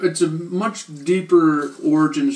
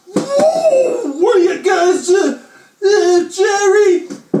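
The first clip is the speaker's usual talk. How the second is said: put-on high, loud wacky character shout. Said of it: "And Cosmo Kramer".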